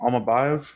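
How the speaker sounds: unsure, question-like rising tune on Almabayev.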